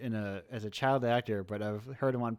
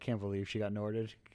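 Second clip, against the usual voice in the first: plain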